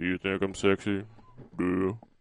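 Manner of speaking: creepy put-on character voice. Kicking off a photo caption contest: Buffalo Bill voice. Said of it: "in the Buffalo Bill voice".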